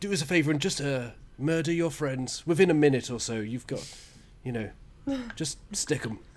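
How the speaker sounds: acted hobgoblin creature voice. Voicing a hobgoblin asking others to murder their friends: Hobgoblin voice. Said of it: "I'm doing the Hobgoblin voice".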